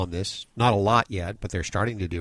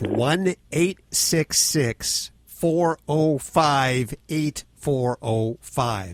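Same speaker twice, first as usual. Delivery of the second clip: very slow, careful and clear, each digit separate; 6 semitones higher than usual. Repeating a phone number once more for everybody, nice and slow. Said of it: "nice and slow for everybody".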